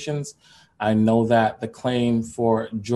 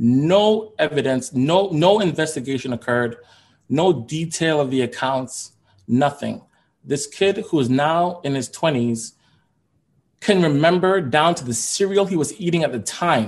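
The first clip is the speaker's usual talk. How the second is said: raised, upset voice, drawn-out no; 4 semitones higher than usual. Speaker upset that a police report shows no investigation, raised, upset voice. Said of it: "for raising my voice because this upsets me".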